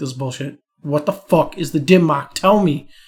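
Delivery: play-acted exasperated, frustrated, demanding outburst. Retelling a friend demanding to be told a secret: imitating a frustrated friend. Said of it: "he gets so frustrated".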